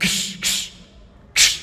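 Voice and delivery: mock soft, voiceless shushing sound.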